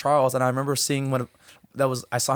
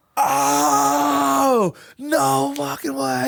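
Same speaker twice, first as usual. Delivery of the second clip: put-on raw scream, very high, very slow, drawn out; 12 semitones higher, 5 dB louder than usual. Speaker recalling a coach's text while in a car with friends, imitating own screaming. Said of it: "screaming at the top of my lungs".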